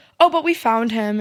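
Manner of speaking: usual speaking voice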